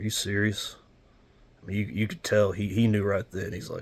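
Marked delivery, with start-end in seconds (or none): 0.0-0.7 put-on very somber tone. Retelling a father's reply to news of who was on board: imitating a very somber tone. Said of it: "in a very, very somber tone".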